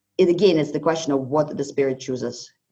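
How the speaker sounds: ordinary delivery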